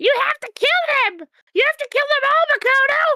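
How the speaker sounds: shrill, very high, loud cartoon voice. Voicing a line while playing, as Toad from Mario. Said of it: "Toad from Mario!".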